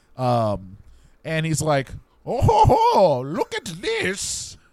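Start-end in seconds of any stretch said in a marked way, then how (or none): 2.3-4.5 very high, very slow, drawn-out bad English accent. Pitching a movie plot, voicing the board-game character: intended English accent, sounds German. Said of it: "That's what he sounds like".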